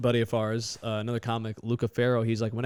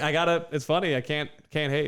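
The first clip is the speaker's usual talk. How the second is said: ordinary delivery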